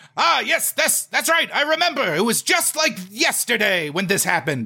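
put-on cartoon scientist narrator voice. Retelling how the live action segments sounded: Christopher Lloyd voice. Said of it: "you would hear Christopher Lloyd's voice being like".

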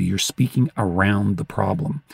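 ordinary talk, nothing marked

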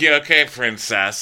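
swaggering, menacing, half-threatening taunting tone. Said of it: "a pseudo-threatening way".

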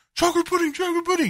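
very high, half-swallowed mumbling under the breath. Retelling a South Park scene, imitating Kyle mumbling. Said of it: "he's just mumbling".

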